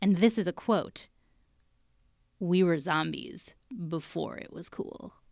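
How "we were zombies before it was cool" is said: put-on flat monotone, quieter. Quoting what some people have been quoted as saying, imitating a monotone voice. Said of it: "in their monotonic voice".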